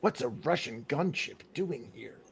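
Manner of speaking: low, deep, very quiet voice. Talking about Metal Gear Solid with friends, the speaker repeats a line in Snake's voice. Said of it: "in Snake's voice where I was like".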